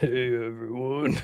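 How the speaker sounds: soft, fake low voice, barely managed. Trying to fake a deep voice after saying they can't: fake deep voice. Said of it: "I can't even fake a deep voice".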